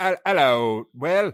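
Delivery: put-on poor South Cockney Wales accent. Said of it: "worst English accent I have ever heard".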